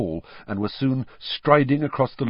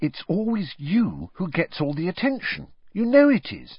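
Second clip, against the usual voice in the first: calm, patient, animated tone; 8 semitones higher than usual. Narrator reading one character's reply to another, patient. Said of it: "said Hermione patiently".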